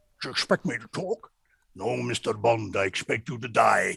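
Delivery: put-on Scottish movie-star voice. Answering a guest who says he sounds like Sean Connery: Sean Connery voice. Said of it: "you sound like Sean Connery?".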